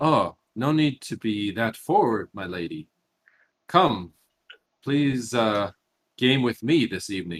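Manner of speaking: wry smiling character voice. Voicing a character who spins around and smiles wryly: wry, flirtatious NPC voice. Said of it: "flashes you a wry smile and says".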